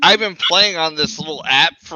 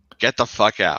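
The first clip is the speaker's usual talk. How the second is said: mock sweet gentle voice, lower pitch; 4 semitones lower than usual. Imitating the reply to a plan to take the kid away: imitating a loving, gentle tone. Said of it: "in the most loving, gentle way possible".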